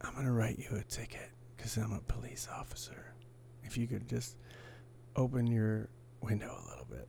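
soft, whispered police officer voice.

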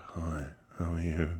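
low, creepy, sinister stalker-style voice. Trying out which voice to come in with, stalker voice. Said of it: "sound like a stalker".

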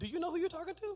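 indignant woman's voice, high and fast.

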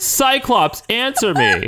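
very high, wailing, swooping sing-song scream. Retelling a scene where Xavier sits at home screaming: imitating Xavier screaming. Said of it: "screaming at no one".

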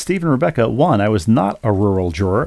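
ordinary delivery

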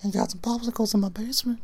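high-pitched, creepy, leering voice. Asked to do the character, speaking in a Herbert the Pervert voice. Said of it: "You should do a Herbert the Pervert voice".

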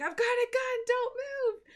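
acted, very high-pitched, threatening scream. Retelling a TV scene where a character with a gun screams: imitating someone screaming.

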